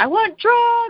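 put-on screaming, voice very high-pitched. Retelling her home birth, screaming at her mom, retelling screaming. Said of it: "I just kept screaming".

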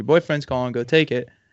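ordinary talk, nothing marked

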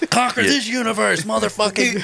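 very high, rising, fired-up, aggressive hype. Reacting to talk of warning shots, others laughing: aggressive hype. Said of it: "Whoa, chill out".

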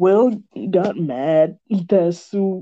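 very slow, deliberate, drawn-out delivery. Recapping the story in a voiceover, talking very slowly. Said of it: "Why am I talking so slow?".

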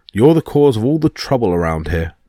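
ordinary delivery, nothing marked

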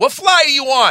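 yelled out, very high-pitched. Retelling a phone call about flights: Richie Byrne voice, yelling. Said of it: "that Richie Byrne voice".

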